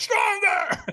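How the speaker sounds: mock yelling, a screamed single word. Retelling a firewalk trainer pushing for a stronger yes: imitating a trainer screaming. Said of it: "he screamed at me".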